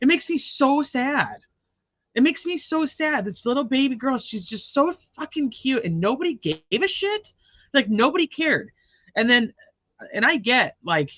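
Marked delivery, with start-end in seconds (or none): 0.0-8.7 angry, pitched-up, pissed-off venting. Discussing a case and questioning how the records were checked; pissed off. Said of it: "I'm like all pissed off".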